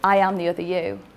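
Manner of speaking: ordinary talk, nothing marked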